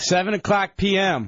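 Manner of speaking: called out, like a mild yell. Answering what time the event starts, yelling. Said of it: "Why are you yelling?".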